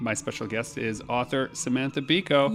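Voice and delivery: normal talking voice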